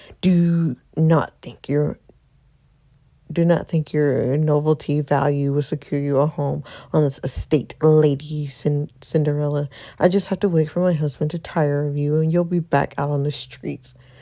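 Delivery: words pushed out in a hissing voice. The Countess steps toward the girl and lowers her voice: low hissing voice. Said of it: "lowers her voice to a hiss".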